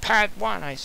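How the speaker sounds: angry voice.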